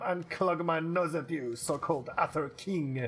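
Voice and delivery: slow, horrendous mock French accent. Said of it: "horrendous French accent".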